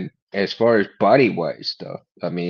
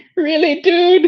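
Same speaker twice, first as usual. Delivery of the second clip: much higher, mocking, squeaky voice. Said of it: "you got this high voice".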